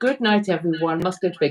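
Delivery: ordinary talk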